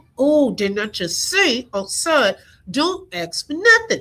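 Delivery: put-on exasperated, fed-up scolding, rising pitch. Acting out a parent scolding a child in a store: acting an exasperated parent. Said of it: "the pep talk like you give your kids".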